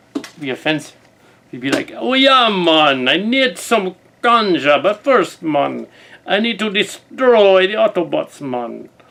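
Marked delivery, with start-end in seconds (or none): 2.0-8.9 slow, cheesy, very fake put-on Jamaican accent. Imagining how a character would talk: really fake Jamaican accent. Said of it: "really, really fake Jamaican accent".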